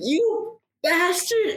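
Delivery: very high, shrieking pained cry. A game narrator voices Ellen Mortal going down, screaming. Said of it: "goes down screaming".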